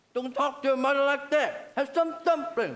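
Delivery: shouting. Telling off the daughter for how she spoke to her mother: shouting. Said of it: "Stop shouting".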